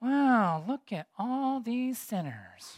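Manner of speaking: very slow, drawn-out mutter under the breath. Retelling a story where a figure looks over the crowd below, retelling a mutter under breath. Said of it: "under his breath".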